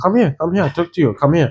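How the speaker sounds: put-on Chinese accent. Remembering the man with the DVDs calling him and his brother over, imitating a Chinese accent. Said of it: "It was Chinese accent".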